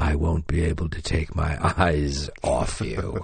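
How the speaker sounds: deep, low, tomb-like sepulchral voice. Recalling his answer when asked to watch the rehearsals, deep, sepulchral tones. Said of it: "with his deep, sepulchral tones".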